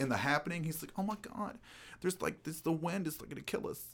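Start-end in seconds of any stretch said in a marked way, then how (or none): 1.0-3.8 whiny delivery with a slight lisp on s sounds. Mocking how he talks in The Happening: imitating a whiny lisp. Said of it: "It's like he's whining".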